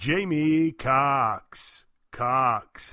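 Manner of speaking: loud ring-announcer voice, called out repeatedly. Retelling hearing an announcer rehearse on the microphone: David Diamante impression. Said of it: "I could hear him just repeatedly".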